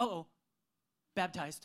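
mock sudden realization with an abrupt stop. Retelling how a boy stopped mid-yell at his brother Owen, retelling a sudden realization. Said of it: "then he stops just like that and says".

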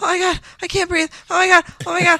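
play-acted high, frantic, panicked outburst. Retelling the moment everyone walked in and breath was gone, imitating past panic. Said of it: "Like I was panicking".

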